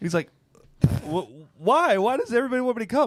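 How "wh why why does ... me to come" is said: very high, frantic, unhinged outburst. Retelling a comedy bit about a trip to the beach: imitating someone losing his mind. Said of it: "losing his mind on something supposed to be so innocent".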